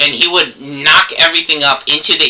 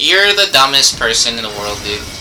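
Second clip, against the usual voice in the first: ordinary talk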